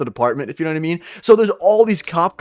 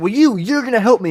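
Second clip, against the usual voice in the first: mock screaming yell, higher; 5 semitones higher than usual. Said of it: "she was genuinely screaming".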